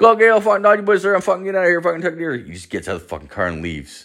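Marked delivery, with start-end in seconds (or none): 0.2-2.4 Newfoundland dialect, hard to decipher. Retelling what a passenger said in the car: imitating a newfoundland accent. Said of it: "Is that how all fucking Newfoundland people are?".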